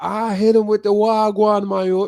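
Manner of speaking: put-on speaking with a Jamaican patois accent. Speaker showing how he talks around his Jamaican friends, in Jamaican patois. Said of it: "like that got the the patois".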